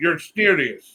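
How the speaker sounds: sarcastic delivery.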